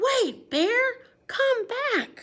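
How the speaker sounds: very high, big excited exclamation. Reading a picture book aloud, showing exclamation points, said really big and excited. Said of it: "So you have to say it really big".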